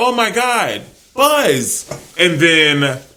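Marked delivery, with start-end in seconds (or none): 0.0-1.9 mock very slow, high, carrying drawn-out yell. Retelling how a kid yelled across the street, imitating a kid yelling. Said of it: "he yelled over".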